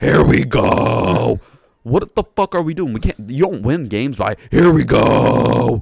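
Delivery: furious, very loud, angry ranting outburst. Ranting about the team's play, pissed off. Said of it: "I'm just pissed off".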